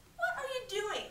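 mocking, jeering taunt, pitched very high. Narrator reading Kip's question to Wolf, jeering. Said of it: "Jeered Kip".

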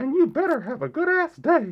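high, squeaky cartoon mouse voice. Asked to say the show's sign-off line, sounding like a cartoon mouse. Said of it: "why he sounds like Mickey Mouse".

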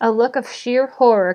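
ordinary delivery

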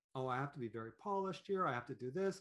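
normal talking voice

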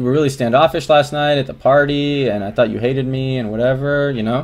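ordinary talk

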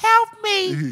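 very high, yelping cry. Imitating Brittney Griner when she was trying to get out, Brittney Griner's voice going high. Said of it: "Her voice went high when she was trying".

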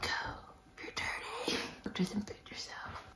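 whispered very quietly. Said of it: "I'm like".

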